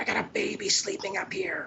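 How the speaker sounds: acted, annoyed, high, irate yell. Retelling how a neighbour came out and yelled at the band: imitating a yelling neighbour. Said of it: "she starts yelling at us".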